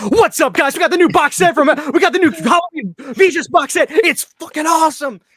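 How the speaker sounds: very high, bursting, energetic hyped streamer video-intro voice. Imitating how Ken talks on TikTok: imitating Ken's energetic TikTok voice. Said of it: "he gets a burst of energy".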